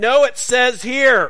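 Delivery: stern, very high voice. Disagreeing about detour directions, retelling own reply in a very stern voice. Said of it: "I said with a very stern voice".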